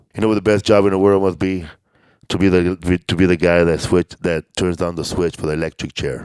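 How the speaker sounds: low, dead-flat, bone-dry deadpan. Retelling a comedian's stage joke: imitating John Mendoza's deadpan delivery. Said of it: "deadpan, like, deadpan".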